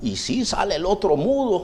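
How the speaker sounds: ordinary talk, nothing marked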